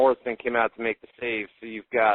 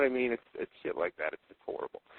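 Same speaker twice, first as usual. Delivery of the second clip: ordinary delivery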